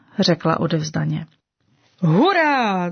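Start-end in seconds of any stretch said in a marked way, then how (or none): 2.0-2.9 eager, delighted, enthusiastic, drawn-out cheer. A pink clover cheers when she agrees to help the flowers: exclaiming enthusiastically. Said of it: "zvolal nadšeně růžový jetel".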